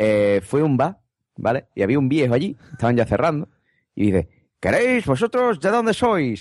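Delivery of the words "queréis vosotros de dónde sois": put-on Galician accent. Retelling an old man in a Madrid bar asking where they're from, Galician accent. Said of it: "Era como gallego así".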